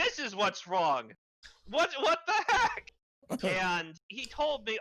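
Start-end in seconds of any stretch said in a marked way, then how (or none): 0.0-2.9 acted heated angry outburst, voice raised, pitched up. Recounting a complaint to the rep, the speaker reenacts raising their voice. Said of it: "And I was like raising my voice".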